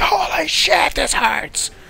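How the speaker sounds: high, loud pained yelp.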